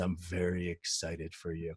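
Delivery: put-on unexcited flat delivery. Retelling his reply when asked if he was joking, mock-flat, unexcited delivery. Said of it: "you don't sound like you're excited".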